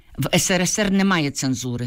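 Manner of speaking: plain reading voice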